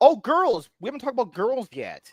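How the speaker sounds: voice suddenly jumping up to high pitch. Suddenly changing the topic to girls: high-pitched voice. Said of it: "why you went so high pitched with that".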